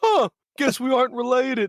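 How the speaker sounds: very high, dim-witted cartoon voice. Describing a movie's Frosty the Snowman to a friend: dumb Frosty the Snowman voice. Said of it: "So it's this dumb-ass voice".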